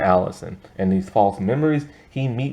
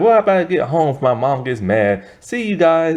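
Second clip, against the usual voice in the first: put-on high, couldn't-care-less girl's voice; 7 semitones higher, 4 dB louder than usual. Retelling a girl talking to the ambulance dude: imitating a cavalier girl. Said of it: "she's so cavalier about everything".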